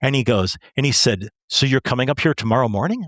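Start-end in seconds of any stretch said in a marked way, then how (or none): 1.5-3.1 put-on rough tone, much faster. Retelling what an almost angry man asked the speaker, retelling a rough question. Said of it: "he's being kind of rough with me".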